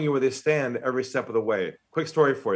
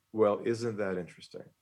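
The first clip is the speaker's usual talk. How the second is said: lowered voice, lower and quieter; 4 semitones lower, 6 dB quieter than usual. Retelling what they said to him, the speaker quotes themself in a lowered voice. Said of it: "lowered my voice".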